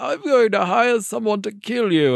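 put-on slow, high narrator voice with British accent. Joking about a film crew threat, doing a Richard Attenborough voice. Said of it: "in a British accent".

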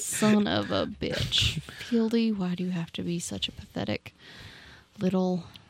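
soft, very slow muttering under the breath. Playing a character alone in a cell: muttering under breath. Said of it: "muttering to yourself under your breath".

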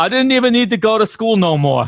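high-pitched, put-on Boston accent. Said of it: "No More is my favorite thing".

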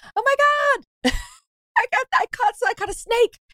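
mock very high shriek through laughter. Retelling a fly-fishing trip where the guide couldn't see, the speaker is retelling screaming, laughing. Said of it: "So I'm screaming".

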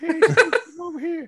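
shrill, very high, loud put-on demon voice. Retelling how the ADD demon called out during the movie: imitating my ADD demon. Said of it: "That's how they talk".

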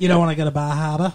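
accent from Maine. Two speakers joking about local accents, one tries a line in a Maine accent. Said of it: "That's more of a Maine accent".

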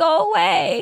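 very high-pitched, small, sad little voice. Recapping a scene where a girl runs to her room, quoting her in a mock-sad little voice. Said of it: "this is a sad little voice".

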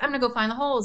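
play-acted, high-pitched, eager, excited little-kid voice. Telling a story, the speaker voices a four-year-old boy running ahead, imitating an excited kid. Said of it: "and like just excited, like a little kid".

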